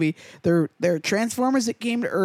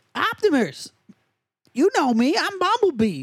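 bad put-on robot voice, a bit high-pitched; 8 semitones higher than usual. Retelling a story, [name] does Bumblebee speaking to Optimus: bad Bumblebee impression. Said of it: "This is not a good Bumblebee".

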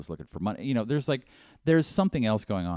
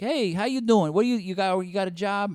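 breezy put-on Chicago accent, pitched very high; 12 semitones higher, 4 dB louder than usual. Acting out the mayor's unvetted childhood friend appointed chief of police, in a put-on Chicago accent. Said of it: "I don't know why I'm doing a Chicago accent".

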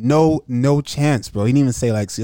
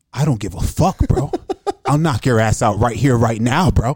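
mock threatening whisper. Retelling how a man leaned in with a threat: imitating someone whispering a threat. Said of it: "leaned in and went like this and started to whisper".

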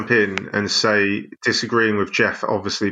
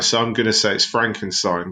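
ordinary talk

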